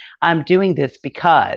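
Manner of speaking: put-on loud announcement delivery. Retelling how mom speaks up in the grocery line: imitating mom's loud announcer voice. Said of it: "telling everybody like an announcer".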